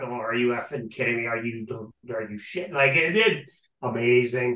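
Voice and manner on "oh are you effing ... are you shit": mock muttering, much quieter. Retelling video from last night's game, imitating muttering under breath. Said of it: "Dubas muttering under his breath".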